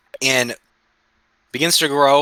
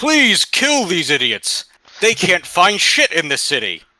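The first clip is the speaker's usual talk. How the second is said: high, called-out statue voice. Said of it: "the statue's calling out to passersby".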